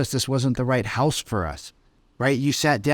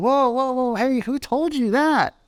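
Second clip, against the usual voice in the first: skeptical, doubtful challenging tone, pitched very high; 12 semitones higher than usual. Teaching how to shift between tones, demonstrating: skeptical tone. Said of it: "a little bit of a skeptical tone".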